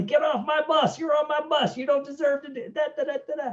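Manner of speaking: high-pitched, shrill, screaming drill-instructor voice. Retelling how the drill instructor threw a recruit out: imitating screaming. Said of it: "starts screaming at everybody".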